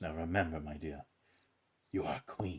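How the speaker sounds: leaning in to speak close. A game master's character leans over to a player's character while walking away: leaning in to speak close. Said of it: "he just leans over to you".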